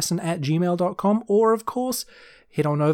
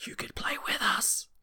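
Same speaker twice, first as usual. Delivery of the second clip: hushed whisper, higher and quieter; 7 semitones higher, 11 dB quieter than usual. Listing perks for Patreon supporters: whispering. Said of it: "Why am I whispering?".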